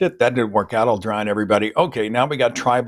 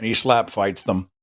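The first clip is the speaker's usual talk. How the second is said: normal talking voice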